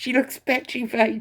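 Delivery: words broken by laughter. Speaker updates viewers on someone going before a judge: laughing while speaking. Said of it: "I'm sorry for laughing".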